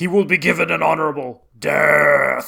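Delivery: slow, loud, ground-out gravelly voice. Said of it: "in, like, this really gravelly voice".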